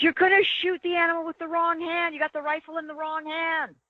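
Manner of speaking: mock, very high, shrill screaming. Retelling a hunt, imitating the best friend screaming at the speaker: imitating a friend screaming. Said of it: "my friend screaming at me".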